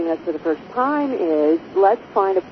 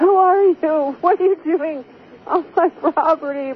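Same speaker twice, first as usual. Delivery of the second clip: shrill, high-pitched shrieked screaming; 11 semitones higher than usual. Telling how they screamed at a drone camera over their property, re-enacting the screaming. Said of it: "I started screaming at it like".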